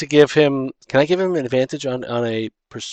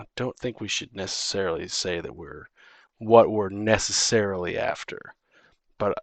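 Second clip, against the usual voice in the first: whisper, quieter, lower; 5 semitones lower, 9 dB quieter than usual. Player in a role-play game whispering into Booterbot's ear, whispering. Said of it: "gonna whisper in his ear".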